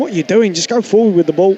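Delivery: ordinary talk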